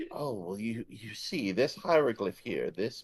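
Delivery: patronizing, condescending, annoyingly over-explaining know-it-all tone. Playing a character explaining hieroglyphs to another player: acted condescending mansplaining. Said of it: "very annoyingly mansplain everything to you".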